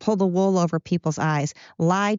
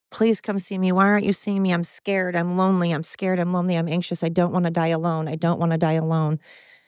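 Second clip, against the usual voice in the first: put-on pleading, begging tone. Retelling how her mom called her constantly: imitating her mom begging. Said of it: "begging me".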